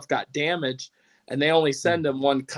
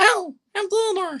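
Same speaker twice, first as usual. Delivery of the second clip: put-on chipmunk voice, much higher, slower. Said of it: "I did my Chipmunks impression".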